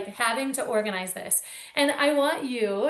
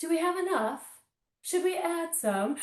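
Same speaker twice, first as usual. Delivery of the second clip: put-on British accent, high pitch; 5 semitones higher, 4 dB quieter than usual. Describing sitting with a husband to review a joy calendar: put-on British accent. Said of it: "in a British accent".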